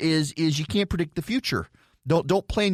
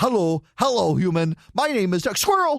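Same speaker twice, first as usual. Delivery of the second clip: put-on talking dog voice, plain English; 4 semitones higher, 4 dB louder than usual. Retelling a story where the dog runs up to greet the travelers, Doug the Dog voice. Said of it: "I'm doing my Doug the Dog impression".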